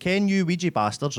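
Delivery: put-on Dundee accent. Repeating a Dundee man's line a wee bit slower, in a Dundee accent. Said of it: "I'll do that a wee bit slower".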